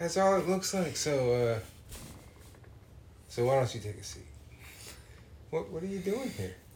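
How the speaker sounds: breathy, half-whispered voice. Joking that a shop name sounds suspicious: Chris Hansen voice. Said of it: "Chris Hansen's voice say".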